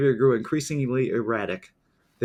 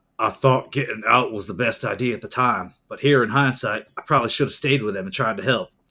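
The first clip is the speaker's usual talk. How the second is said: unconvincing, poorly done put-on Australian accent; 3 semitones lower than usual. Narrating a case and reading out a later quote, in an attempted australian accent. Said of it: "that's my best Australian accent".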